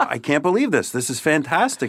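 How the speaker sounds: gushing, thrilled, excited, swooping exclamation. Police officer retelling his reaction to a prize email: retelling his excited reaction. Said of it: "I got really excited".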